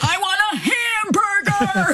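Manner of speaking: put-on shrill screaming, very high and drawn out. Recalling a night at a drive-through, retelling people's screaming. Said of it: "they're screaming".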